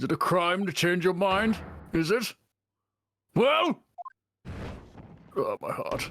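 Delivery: put-on indignant, incensed old man character voice. Playing an old man in a role-play before the jurors, old man voice. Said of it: "you are doing amazing as this old man".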